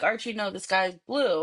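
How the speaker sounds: ordinary delivery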